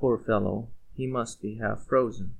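ordinary delivery

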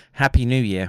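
usual speaking voice

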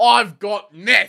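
very loud, shrill, high-pitched boastful yell. Speaker recalls a man yelling as they walked in: retelling a proud yell. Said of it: "he yells really proudly".

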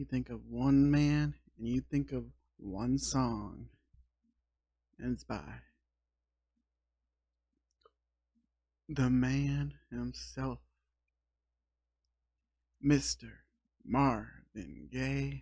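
fake seductive, sexy radio DJ voice. Introducing a slow jams playlist on Valentine's Day night: put-on sexy voice. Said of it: "I'm putting on my real sexy voice tonight".

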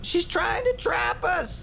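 shrill, very high, panicked shriek of alarm. A voice in the crowd as the doors are sealed shut, panicked shriek. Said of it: "A panicked voice shrieked from the crowd".

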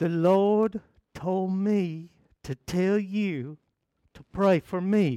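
put-on voice of an older person.

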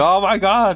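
put-on high, excited, starstruck fan screaming. Retelling a fan meeting a content creator: imitating someone screaming.

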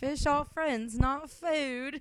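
put-on, botched, high British accent. Voicing a line right after naming the new pet, in a bad British accent. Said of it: "What accent is that?".

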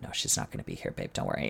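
very quiet, breathy, hushed near-whisper. Retelling a producer's reply to a worried question: imitating someone speaking quietly. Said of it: "he very quietly said".

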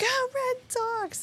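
put-on very high, soft little girl squeal. Telling about a family night at the ballpark, how a little girl yelled: imitating a child screaming. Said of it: "screaming at the top of her lungs".

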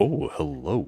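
over-the-top, hushed, macho male voice. Describing a show's character to the other speaker, imitating his line: overboard male voice. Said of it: "just the overboard male voice".

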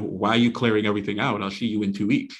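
plain

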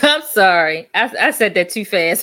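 loud speech through laughter.

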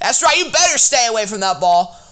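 high, loud hollering yell. Retelling what Tad yelled at a kid near a ball: imitating Tad yelling. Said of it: "Tad yelled at the kid".

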